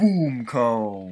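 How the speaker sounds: muffled through cupped hands. While playing Pikmin, the speaker calls out through their hands: muffled through hands. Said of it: "I said that through my hands".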